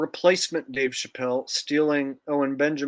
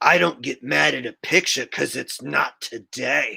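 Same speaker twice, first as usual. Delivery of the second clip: slow, rough, creaky delivery, drawn out; 4 dB louder than usual. Comparing how a comedian sounded before and after: imitating new Dave Chappelle. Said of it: "new Dave Chappelle kinda sounds like this".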